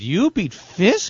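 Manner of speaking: high, stunned, shocked, incredulous voice. Retelling someone's reaction on hearing of the win: imitating shocked disbelief. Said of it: "Shock in her voice".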